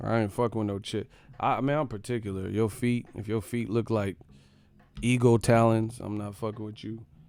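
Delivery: ordinary delivery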